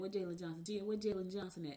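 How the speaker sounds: ordinary delivery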